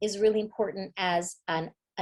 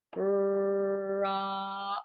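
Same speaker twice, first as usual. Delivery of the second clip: word stretched out really slowly, long and drawn-out. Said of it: "I'm gonna say this word really slowly".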